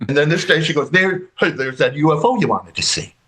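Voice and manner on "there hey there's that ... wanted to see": mock needling, ball-busting teasing tone. Retelling how mother announced a UFO: imitating mother's ball-busting tone. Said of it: "with a real ball-busting tone to it".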